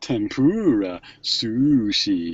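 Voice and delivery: put-on over-the-top American English accent. Mimicking how TV commercials say food words, mock American English accent. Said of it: "which is like a Japanese person mocking an English accent, an American English accent".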